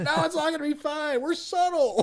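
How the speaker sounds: very high, tipsy, put-on drunken voice. Retelling what a character said drunk at his piano: imitating a drunk man. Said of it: "he's up there drunk with his piano".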